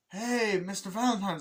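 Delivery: acted-out yell, high pitch. Retelling a film scene where a character calls out: imitating someone yelling. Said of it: "he yells".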